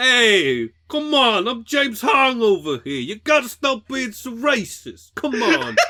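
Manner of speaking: put-on shrill, loud Brooklyn accent. Telling a story about James Hong on a show, speaker voices him: James Hong, Brooklyn accent. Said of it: "That's Brooklyn".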